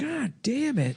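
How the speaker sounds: very high, disappointed, let-down dad voice outburst. Acting out a dad in a fake commercial, imitating a disappointed dad. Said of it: "disappointed in your son".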